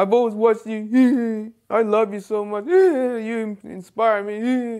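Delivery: slow, drawn-out, teary, adoring gushing voice.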